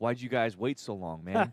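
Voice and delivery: put-on weepy, emotional, tearful crying voice. Retelling a drafted player's emotional phone call with the coaches: imitating someone crying. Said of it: "just crying".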